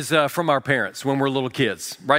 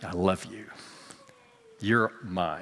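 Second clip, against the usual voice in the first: soft, gentle, low-key hushed whisper; 7 semitones lower, 9 dB quieter than usual. Retelling a young son tucking his doll in for a nap: imitating someone whispering. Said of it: "he's whispering to Simba".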